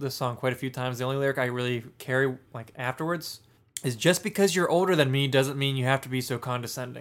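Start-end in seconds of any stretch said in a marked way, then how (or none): none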